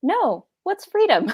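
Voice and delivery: put-on dry delivery in a German accent. Retelling a husband's reply to a cashier: imitating a German deadpan. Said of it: "he replied in a German deadpan".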